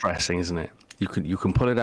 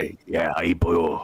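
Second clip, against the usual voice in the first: broad Welsh accent. Showing how a Welsh speaker goes full Welsh now and again, full Welsh accent. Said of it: "just go full Welshian every now and again".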